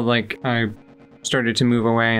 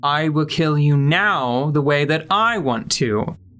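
put-on gritted-teeth delivery, slower; 3 semitones higher than usual. Quoting what he says, retelling through gritted teeth. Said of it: "he says through gritted teeth".

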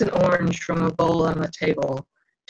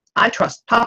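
fierce, higher-pitched, insistent declaration; 5 semitones higher than usual. A daughter answers a remark about her father, in a fierce voice. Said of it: "I say in a fierce voice".

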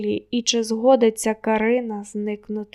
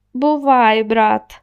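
smug, self-satisfied, much louder; 7 dB louder than usual. Marko bids the narrator goodbye, smug. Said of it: "самовдоволено вишкірився Марко".

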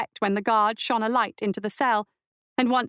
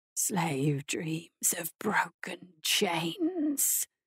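very slow, low, guttural, halting, unpracticed words; 4 semitones lower, 7 dB quieter than usual. A narrator reads the first words of the thing in the cell to Imogen: guttural and unpracticed. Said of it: "The voice behind her was guttural and unpracticed".

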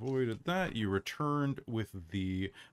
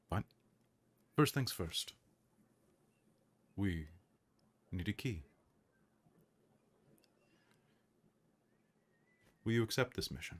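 secretive, conspiratorial, hushed half-whisper. Game master voicing a figure leaning toward the players in an audience chamber: conspiratorial half-whisper. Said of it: "with a conspiratorial whisper said".

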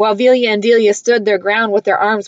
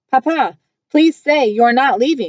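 pleading, begging, higher pitch; 3 semitones higher than usual. The girls beg their Papa not to leave: pleading. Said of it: "Velia and Delia's plea ripped through my heart".

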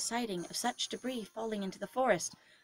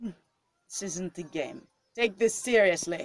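put-on slow, deliberate German man accent; 3 semitones lower than usual. Speaking as Claus in a group story game, German man accent. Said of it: "This is the German man".

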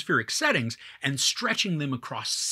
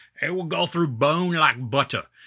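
terrible, clumsy put-on British accent; 4 dB louder than usual. Quoting a film character on pigs: terrible Brick Top British accent. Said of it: "that is a terrible accent".

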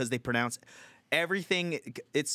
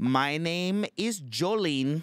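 put-on Filipino accent, higher; 4 semitones higher, 3 dB louder than usual. Imitating a customer support agent on the phone: imitating a Filipino accent. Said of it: "the Filipino accent".

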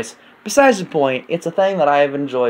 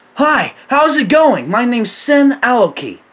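put-on very high-pitched, loud voice like a little kid; 11 semitones higher, 5 dB louder than usual. Showing the voice they made for their character as a kid, Sin Aloki kid voice. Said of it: "I have a voice for him".

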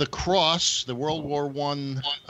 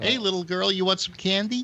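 sleazy, creepy, pitched-up luring voice; 6 semitones higher than usual. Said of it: "the pedophile voice".

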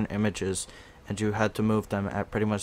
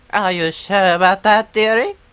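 shrill, booming, very high, loud grandma voice; 11 semitones higher, 13 dB louder than usual. Urged to keep doing the grandma voice, the speaker is imitating Edith. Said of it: "You should do that grandma voice all the time".

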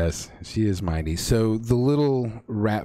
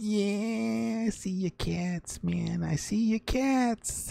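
very high, very slow, rough squeaky rat voice; 12 semitones higher, 6 dB quieter than usual. Game master voices a rat-folk character stepping out of the shadows: squeaky rat-folk voice. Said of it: "So the little rat folk person steps out from the shadows, ... Okay, so what you hear then are very sort of rough but squeaky kind of voices that start, ... And in a little squeaky voice that I have not yet mastered".

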